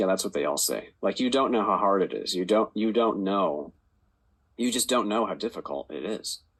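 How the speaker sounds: ordinary delivery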